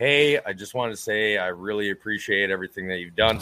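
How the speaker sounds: deep, low, natural male speaking voice. Imitating how a man's real voice sounds, lower than theirs: deep low voice. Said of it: "His real voice is lower than mine. Like, his real voice is like".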